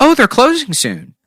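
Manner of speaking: shrill, very high, loud voice. Acting out a shopper turning to her friend: imitating a customer. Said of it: "She's like".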